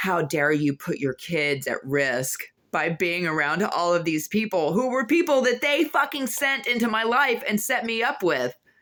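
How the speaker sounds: huffy, puffing, scolding freak-out with rising pitch. Retelling how a stepmom came in scolding: imitating stepmom freaking out. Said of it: "all freaking out, like, all huffy puffy".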